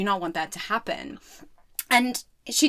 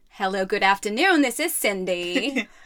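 put-on atrocious Texan accent. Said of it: "my atrocious Texan accent".

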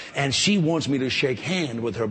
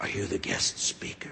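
play-acted breathy, hushed, prayerful tone of voice; 5 semitones lower, 7 dB quieter than usual. Recounting a lady who approached at a church handshake, imitating a praying tone. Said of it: "with kind of a praying tone of voice".

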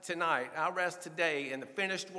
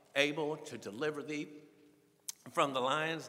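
ordinary talk

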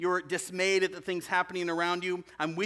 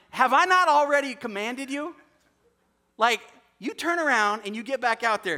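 put-on loud, high, sassy old woman voice; 5 semitones higher, 7 dB louder than usual. Acting out god as a sassy old woman scolding a complainer: sassy old woman voice. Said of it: "just a sassy old woman".

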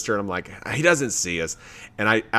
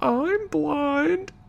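meekest little voice, very high. Retelling what someone behind her said, imitating a meek voice. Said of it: "in the like meekest voice".

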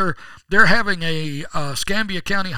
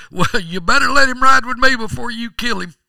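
put-on old drunk voice, pitched much higher; 5 semitones higher, 4 dB louder than usual. Telling a joke about a preacher and an old drunk, voicing the drunk. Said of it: "that old drunk says".

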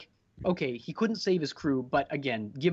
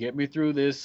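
mock calm, unemotional voice. Discussing a stoic character, quoting his line over comms; imitating Miller's cool voice. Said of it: "got that cool voice being like".

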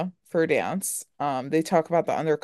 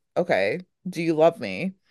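put-on softer, quieter voice. Retelling a scene where she gets closer: imitating someone speaking quieter. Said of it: "she kinda gets, like, quieter".

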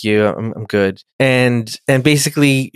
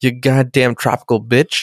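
imitated, upset-sounding voice. Retelling a scene, imitating upset Picard. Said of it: "and he's very upset".

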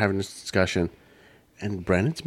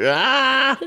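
high, loud crying wail. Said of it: "And it just like".

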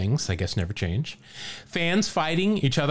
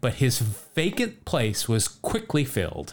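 normal talking voice

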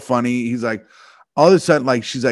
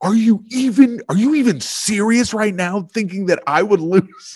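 mock yelling, higher pitch; 8 semitones higher than usual. Retelling how he yelled in the middle of the restaurant, retelling a yell. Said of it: "he just started yelling it".

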